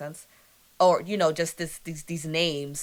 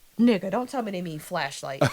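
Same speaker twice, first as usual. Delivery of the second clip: usual speaking voice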